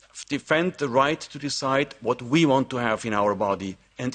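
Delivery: plain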